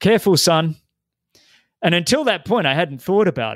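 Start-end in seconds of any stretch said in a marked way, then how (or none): 0.0-0.8 mock call shouted out in a raised voice. Retelling a father yelling a warning during a race: imitating dad yelling out. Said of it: "he yelled out".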